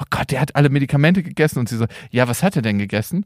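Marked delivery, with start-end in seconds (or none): 0.0-1.6 put-on total panic, alarmed. Retelling the speaker's mother's words during an emergency call, retelling mother's panic. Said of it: "meine Mutter ganz panisch so".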